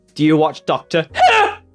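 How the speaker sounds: loud, heavy caps-lock stress on the word "who". Quoting how someone asked about doctor who, loud heavy stress on who. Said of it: "They said it like this. Like caps locked the Who".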